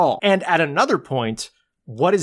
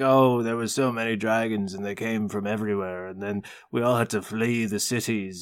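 low, soft, gloomy, somber movie trailer narrator voice. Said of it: "He, he's like".

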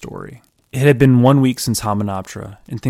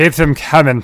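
put-on loud, pitched-up, drunken British accent; 6 semitones higher, 6 dB louder than usual. Reading a story aloud, the character orders from the bartender in a drunk British accent. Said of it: "if you want me a drunk British person".

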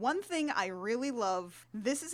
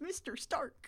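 whispered, mournful, put-on American accent; 3 semitones higher, 8 dB quieter than usual. You mock English actors' wrong American accents, with Tom Holland saying it sadly. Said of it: "when he sadly says".

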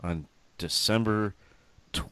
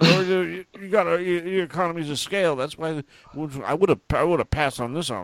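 put-on spluttering, rattled-off talk, much higher; 9 semitones higher than usual. Speaker retells a would-be eBay reseller talking, imitating rattled-off spluttering talk. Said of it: "he's just like rattling off stuff, like spitting".

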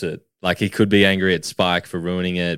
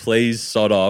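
mock yelling, higher; 4 semitones higher than usual. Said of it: "yelling at him to piss off".

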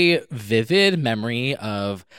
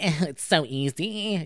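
put-on mimicked child voice, higher and quieter; 3 semitones higher, 5 dB quieter than usual. Retelling what a kid said about ice skating: imitating a kid. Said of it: "this kid being like".

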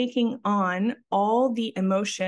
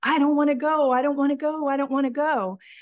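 acted screaming at a higher pitch; 6 semitones higher than usual. Recounting suppressed emotions suddenly surfacing in a session, retelling screaming. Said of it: "And I start screaming".

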